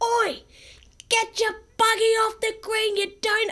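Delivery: mock shrill shout, pitched very high. Retelling how a father yelled at golfers: imitating dad yelling. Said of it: "he's yelled out".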